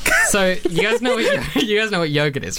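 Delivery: high, wide, giggly laugh through the words.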